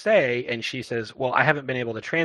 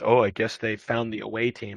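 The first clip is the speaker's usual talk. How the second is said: put-on muttering under breath. Retelling a character's line said under her breath: imitating a mutter under breath. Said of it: "under her breath she says".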